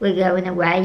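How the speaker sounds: ordinary delivery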